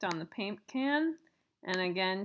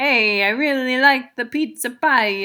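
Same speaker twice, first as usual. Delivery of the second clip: very loud, high put-on Italian accent; 5 semitones higher, 16 dB louder than usual. Recording a sample prompt into a microphone app, in a put-on italian accent. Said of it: "that's my best uh, Italian accent".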